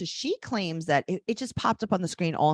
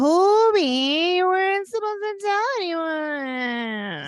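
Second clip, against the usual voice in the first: very high, shrill, annoyed bad put-on woman voice, squealing; 12 semitones higher, 6 dB louder than usual. Retelling her reaction to him revealing the new baby, do a bad impression of a woman. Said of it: "So can I do an impression of her?".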